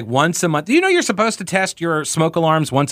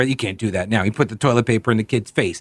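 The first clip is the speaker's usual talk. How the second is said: plain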